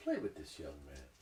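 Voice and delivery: very low mutter under the breath. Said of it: "under her breath".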